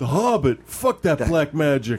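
stupid, dumb meathead jock voice. A student rejecting a book report assignment, in a stupid jock voice. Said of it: "every voice we've done has been a stupid jock voice".

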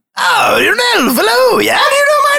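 high, loud, strained, demanding character voice.

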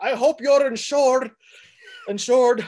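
put-on loud, high-pitched, heavy Scottish accent. Retelling a car chase scene's line: Sean Connery impression. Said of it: "I can do a better Scottish accent than that".

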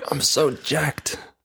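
mock, pumped-up, hyped voice. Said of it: "he's like".

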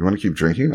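confiding, hushed stage whisper. Retelling a night of drinking: imitating a half-whisper. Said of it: "Kirsten whispers to me".

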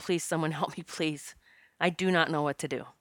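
put-on crying voice. Recounting begging for help on their knees in the yard, imitating own crying. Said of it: "I'm crying and saying".

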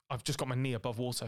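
normal talking voice

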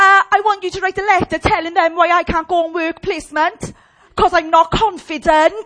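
mock blunt and rude, very loud. Retelling what a student demanded in a meeting: imitating her rude tone. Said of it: "She said it like that".

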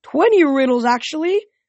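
high, delighted, gleeful tone. Narrating, the sphinx corrects the contestant about the riddles: gleeful. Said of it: "the sphinx said gleefully".

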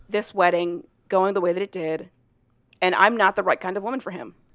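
ordinary delivery

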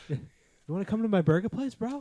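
very high, loud squealing bro voice. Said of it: "that's a pretty good impression".

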